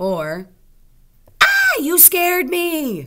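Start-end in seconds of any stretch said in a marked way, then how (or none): 1.4-3.1 high, alarmed, swooping and startled outcry. Teaching when to use an exclamation mark, giving an example of a startled exclamation. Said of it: "That would be an exclamation mark".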